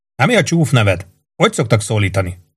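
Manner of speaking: plain reading voice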